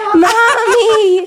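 acted shrill, very high sobbing, wailing call. Retelling how a crying man called his mom: imitating someone crying. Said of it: "crying to his mom".

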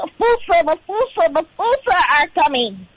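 high, squeaky lemur character voice. Performing a line from a theater camp play when asked: acting a lemur's line. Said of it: "Do that again".

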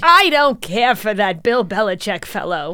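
put-on elderly woman voice.

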